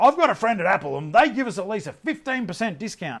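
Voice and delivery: very loud put-on voice. Acting out a customer in a shop, retelling in a very loud voice. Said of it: "in a very loud voice".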